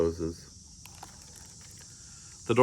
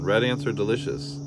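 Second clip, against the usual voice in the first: usual speaking voice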